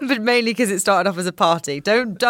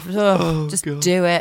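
mock resentful, reluctant sigh, lower pitch; 3 semitones lower than usual. Acting out the character's resentful reaction during the sex scene: imitating resentful reluctance. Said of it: "this is such resentful sex".

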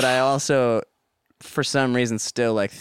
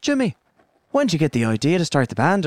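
put-on Irish accent with swooping pitch; 4 semitones higher than usual. Imitating a movie character interviewing himself: great irish accent. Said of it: "That's a great Irish accent".

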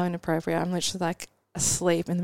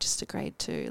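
mock-smug put-on tone, quieter. Retelling answering a question about her tear, in mock-smug retelling. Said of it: "so smugly was like".

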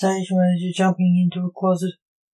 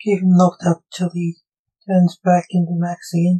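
plain reading voice

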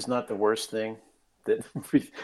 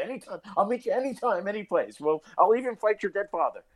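put-on Irish traveler accent, pitched up; 10 semitones higher than usual. Talking about people they would work with anytime, the speaker puts on an Irish traveler accent. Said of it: "I can sound like an Irish traveler and say".

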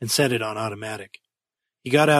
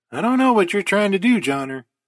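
apprehensive, worried, uneasy, pitched up; 8 semitones higher, 3 dB louder than usual. A man speaks to his companion over his space helmet radio, apprehensive. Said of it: "said DeVete apprehensively".

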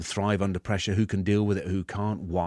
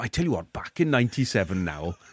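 put-on Welsh-accented voice. Speaker imitates what Welsh mates say, in a Welsh accent. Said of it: "All your Welsh mates go".

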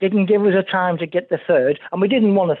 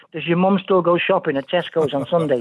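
plain

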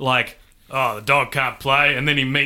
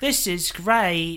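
mocking, put-on, deliberately bad fake British accent; 4 semitones higher than usual. Mocking how a woman talks, the speaker imitates her bad british accent. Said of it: "Is like this".

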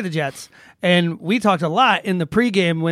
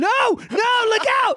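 shrill, very high-pitched, acted-out yell. Retelling watching a game on tv: imitating own yelling at the tv. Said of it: "I was yelling at the T V".

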